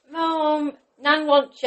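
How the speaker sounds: put-on child shouting. Retelling a child calling through the house about a phone call: imitating a child shouting. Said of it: "Freya was shouting".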